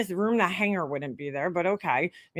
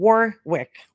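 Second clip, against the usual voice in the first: Warwick stretched out slowly and carefully; 3 semitones lower, 4 dB louder than usual. Saying a hard-to-pronounce town name: slow, drawn-out 'Warwick'. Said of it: "I'm gonna say it slowly and sound stupid".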